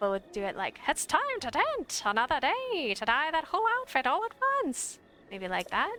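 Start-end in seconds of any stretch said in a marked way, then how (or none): 0.9-5.0 put-on crazy, high, quavering mid-Atlantic accent. Trying out a new voice for a game character, wavering high mid-Atlantic accent. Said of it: "We should give him that mid-Atlantic accent".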